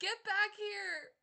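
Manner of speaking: loud, high-pitched calling out.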